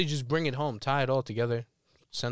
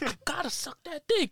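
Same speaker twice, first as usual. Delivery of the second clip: put-on passionate voice, higher. Retelling the friend's words again: imitating Chris, passionate. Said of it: "he was, like, passionate about it".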